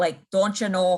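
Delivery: Canadian-like Minnesota accent. Explaining regional American accents to a listener, demonstrating a Minnesota accent. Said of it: "they talk kind of like this".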